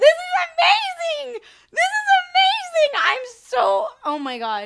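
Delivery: voice shaking with excitement. Speaker reacting right after he liked it, voice shaking with excitement. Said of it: "my voice is shaking because it is".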